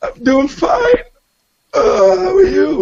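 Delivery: very high, choking, sobbing crying voice. Retelling answering a phone call while crying and choking: retelling own choked-up crying speech. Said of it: "I'm choking, I got stuff drooling out of my nose, I can't breathe".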